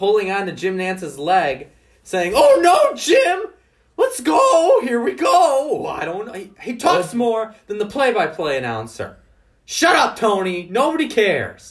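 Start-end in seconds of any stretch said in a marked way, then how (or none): 2.3-5.9 put-on very high, drawn-out small child's voice. Mocking the commentator who talks over the play-by-play announcer; childish Tony Romo impression. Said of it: "sounds like a 5-year-old child".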